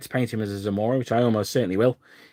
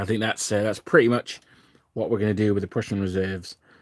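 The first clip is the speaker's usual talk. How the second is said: ordinary talk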